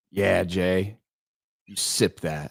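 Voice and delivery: low, slow, lingering suggestive tone. Teasing back a friend who called his 'drink up' sexual: mock suggestive tone. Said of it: "Like if I had done that".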